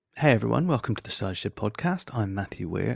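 hushed, quiet half-whispering voice. Podcast host opens the show with house guests sleeping next door, half-whispering. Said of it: "If I sound a little bit whispering".

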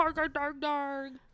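high, slow, stretched-out teasing voice. A host imitates the other host's way of talking: imitating St. Augustine. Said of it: "That was my impression of you".

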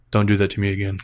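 put-on calm speech. Quoting what he said after the wheel was grabbed again, retelling a very calm warning. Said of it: "just very calmly said".

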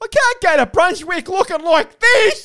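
shrieked, high-pitched, ranting scream. Retelling what a man at the beach kept saying to the speaker, imitating someone screaming. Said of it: "he kept screaming at me".

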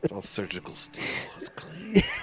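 all soft, hushed, breathy murmur. Showing off a robotic hand claw to the others, said softly. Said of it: "Why'd you say it all soft".

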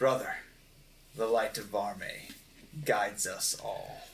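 soft, hushed, almost whispered voice. Voicing words that only one character hears: almost a whisper. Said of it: "'cause it's almost a whisper".

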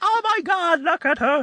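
very high, gushing coo. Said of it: "Everyone's like".

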